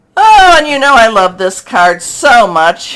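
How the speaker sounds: very loud, swooping, sarcastic mock enthusiasm. Turning to the next tarot card while reading for viewers, sarcastic. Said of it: "she says sarcastically".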